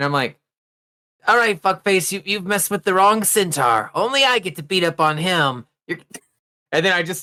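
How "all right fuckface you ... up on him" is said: seething, fuming acted fury, pitched up. Playing a character threatening a monster attacking an ally: fuming. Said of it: "I just start fuming".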